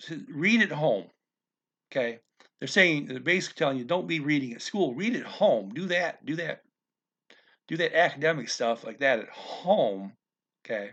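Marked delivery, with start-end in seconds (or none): none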